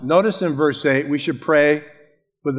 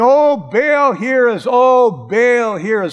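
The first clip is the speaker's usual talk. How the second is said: very slow, drawn-out, high, loud pleading cry; 8 semitones higher, 6 dB louder than usual. Speaker retells how false prophets called on Baal all day, acting out crying out. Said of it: "And they're crying".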